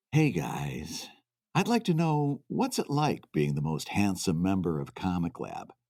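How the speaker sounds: laid-on, put-on sultry tones, very low. Reading a listener's question aloud on request: put-on sultry tones. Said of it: "in the most sultry Brad Geiger tones that you can muster".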